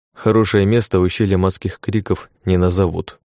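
plain

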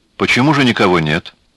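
dry delivery. Salahdin finally asks Emina a question, dryly. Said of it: "сухо спросил".

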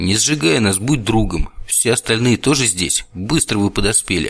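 plain reading voice

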